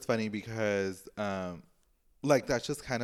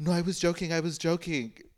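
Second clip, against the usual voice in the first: put-on scared voice, much higher; 9 semitones higher than usual. Retelling how she answered after the intercom prank, imitating someone scared. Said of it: "she got all scared".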